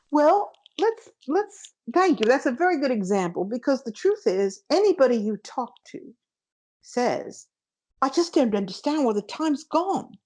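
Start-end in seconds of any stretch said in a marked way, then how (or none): 8.0-10.0 put-on British accent done as a bit. Quoting what people say about lost time: put-on British accent. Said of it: "my British imitation".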